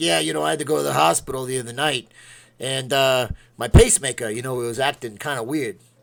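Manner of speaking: put-on loud, drawling old man voice with New York accent. Retelling what an old new york guy with a pacemaker told him, old new york guy's voice. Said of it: "any story you want in that voice".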